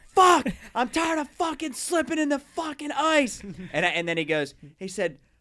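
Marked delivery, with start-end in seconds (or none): 0.2-3.4 put-on scream, higher and louder. Retelling someone slipping on ice and swearing: imitating someone screaming. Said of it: "he's screaming "fuck" at the top of his lungs".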